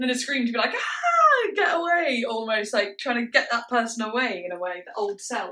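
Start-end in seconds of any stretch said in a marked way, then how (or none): 0.7-2.2 put-on scream, much higher, slower. Describing what they love in what they're listening to, imitating a scream. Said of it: "And then the scream".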